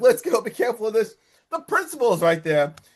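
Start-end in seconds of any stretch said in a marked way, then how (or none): 0.0-1.1 mock, acted-out screaming and yelling. Retelling what Lori shouted on stage, imitating screaming, yelling. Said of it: "Lori is screaming, yelling".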